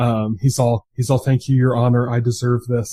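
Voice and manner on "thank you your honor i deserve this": put-on very polite, courteous voice. Retelling how the sentenced man spoke to the judge: imitating a very polite defendant. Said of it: "very polite to the judge".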